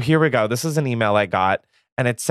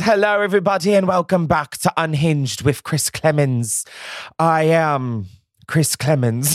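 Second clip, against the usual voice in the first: vague put-on British or Australian accent; 3 semitones higher than usual. Welcoming listeners back to the podcast: put-on british or australian accent. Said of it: "I'm not British or Australian or whatever accent that was".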